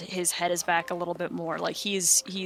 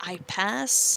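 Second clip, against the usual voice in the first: short halting words, broken phrasing; 2 semitones higher, 3 dB louder than usual. Voicing a character answering a question in giant: broken speech. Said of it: "in a little broken".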